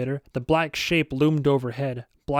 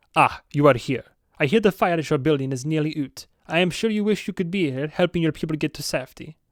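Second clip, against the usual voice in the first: effortful, manly, put-on Swedish accent. Narrating a book, voicing a character with a masculine Swedish accent. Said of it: "trying desperately to do a threat a, a, a masculine Swedish accent".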